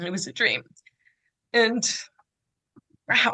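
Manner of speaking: choked-up voice catching with emotion. Speaker recalls getting the chance to meet his mom: choked up. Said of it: "I'm so sorry to be emotional".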